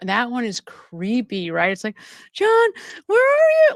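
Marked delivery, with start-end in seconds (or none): 2.3-3.7 put-on frightened pleading, very high and raised. Imitating her phone message asking for John: imitating a terrified voice. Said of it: "she's terrified".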